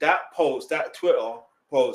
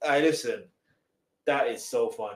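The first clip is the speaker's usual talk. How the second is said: ordinary talk, nothing marked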